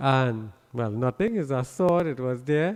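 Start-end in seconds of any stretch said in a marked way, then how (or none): none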